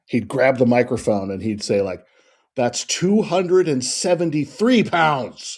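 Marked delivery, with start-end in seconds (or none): 2.5-5.5 mock indignant, worked-up, angry, pitched-up voice. Retelling a wrestler grabbing the announcer's microphone: imitating angry Playboy Buddy Rose. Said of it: "he'd be all angry".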